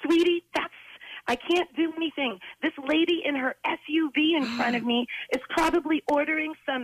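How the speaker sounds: put-on male yelling. Retelling a man in a car yelling to the kid in his back seat, retelling a man's yell. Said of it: "he's yelling".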